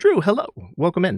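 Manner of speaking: voice breaking with enthusiasm. Welcoming someone into the stream: enthusiastic hello, voice giving out. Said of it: "my voice goes away as I'm saying hello enthusiastically".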